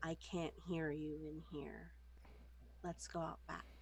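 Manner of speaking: soft, hushed whisper, close to the ear. During a dice game, the speaker's character leans in, whispering in his ear. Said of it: "I sort of like whisper in his ear".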